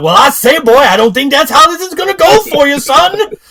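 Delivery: very high, booming, loud cartoon character voice. Retelling a show scene, voicing a demon answering Angel, Foghorn Leghorn voice. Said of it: "Foghorn Leg Thasalak has spawned".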